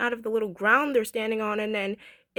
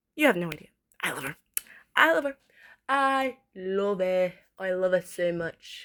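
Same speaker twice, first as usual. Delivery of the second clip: fake, put-on New Zealand accent; 3 semitones lower than usual. Speaker talking to listeners, slipping into a put-on New Zealand accent. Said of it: "Why am I talking in this accent?".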